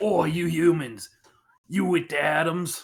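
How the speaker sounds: put-on thick, heavy cockney accent in an orc voice. Game master voices a Gorillamon noticing the players' group, Gorillamon in cockney orc voice. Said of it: "forty K orc voice".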